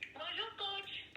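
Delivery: high, thin, slow voice.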